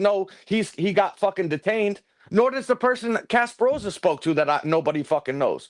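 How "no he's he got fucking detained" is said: ordinary talk, nothing marked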